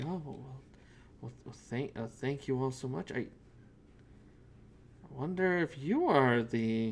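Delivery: soft-spoken, quiet, gentle voice. Voicing a green-skinned young man thanking the party: soft-spoken voice. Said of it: "soon just kind of soft-spoken will approach you and say".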